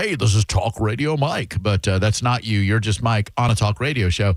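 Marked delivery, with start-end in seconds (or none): none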